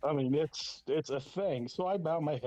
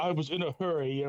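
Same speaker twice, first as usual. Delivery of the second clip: strong British accent impression. Retelling a bathroom encounter, quoting the other man's reply, Lord Steven Regal's British accent. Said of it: "He's very British".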